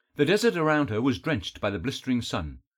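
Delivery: ordinary delivery, nothing marked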